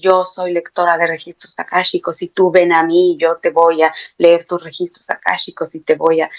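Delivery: ordinary talk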